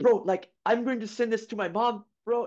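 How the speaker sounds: high-pitched, put-on Italian accent. Retelling a story, the speaker quotes an Italian teammate, imitating an Italian teammate. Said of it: "That's the exact voice I do for all of my foreign teammates".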